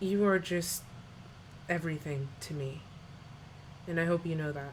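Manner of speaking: hushed, soft, intimate half-whisper, close. Voicing a character who leans in over the music: half-whispering. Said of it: "he leans in to kind of whisper to you over the music".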